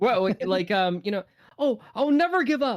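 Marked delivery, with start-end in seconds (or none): 1.9-2.8 very high, hopeful, earnest anime heroine voice. Asked to show their anime voice, hopeful, earnest anime-girl voice. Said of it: "I like to do my anime voice. ... just the very hopeful or like earnest".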